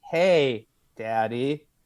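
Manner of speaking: odd cadence, long pause between "hey" and "daddy". Quoting a follower's weird cadence: long pause between 'Hey' and 'Daddy'. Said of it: "had a very weird cadence. ... There's a long pause between "Hey" and "Daddy."".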